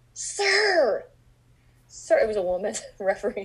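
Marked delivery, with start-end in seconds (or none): 0.1-2.1 very high, drawn-out yell with "sir" stretched long. Retelling a woman yelling at a referee she disliked, the speaker is retelling a yell. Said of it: "she'd yell out".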